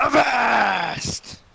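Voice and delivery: high, very loud pirate voice scream. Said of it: "I scream".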